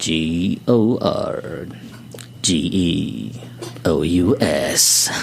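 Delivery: very low, slow, drawn-out sultry delivery. Showing how they spell out a word letter by letter: sexy spelling voice. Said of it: "I put on my sexy spelling voice and then just spell it out, you know, like like this".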